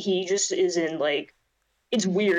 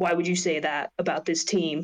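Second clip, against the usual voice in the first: very serious, grave delivery. Retelling a press conference answer: imitating Ryan Blaney, dead serious. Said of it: "his tone of voice was just, like, dead serious".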